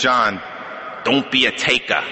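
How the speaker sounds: put-on New York Brooklyn accent. Recalling someone's last message to him, the speaker quotes it in a brooklyn accent. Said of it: "in that Brooklyn accent".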